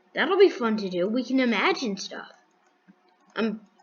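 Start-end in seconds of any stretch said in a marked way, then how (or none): 0.1-2.3 dry, mock-cheerful sarcasm. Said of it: "I'm being sarcastic".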